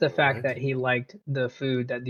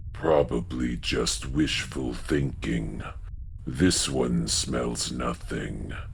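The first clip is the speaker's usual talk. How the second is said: hoarse, low, raspy creature voice; 13 semitones lower than usual. Narrating to players listening at a door, voice the second creature: low raspy creature voice. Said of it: "And the other voice says".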